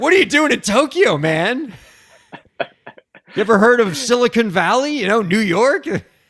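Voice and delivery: mock needling, sarcastic voice. Voicing what skeptics ask about starting a company in Tokyo: imitating a snarky question. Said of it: "I'll be snarky about it".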